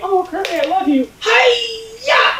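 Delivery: very high, slow puppet voice, Hi-ya stretched. Describing a favorite Muppet's vocal range: Miss Piggy voice. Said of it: "Miss Piggy's my favorite in particular. And when she's like".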